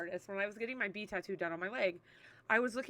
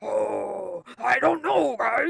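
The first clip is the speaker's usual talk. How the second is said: put-on worried dog voice, louder, much slower; 12 dB louder than usual. Showing the voices the speaker gives their dogs, Pi's worried dog voice. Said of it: "he's very worried about everything".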